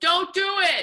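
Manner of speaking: very high, shrill shouted yell. Retelling how the dad calls out to couples from the car: imitating dad yelling out car window. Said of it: "drives by weddings ... and goes".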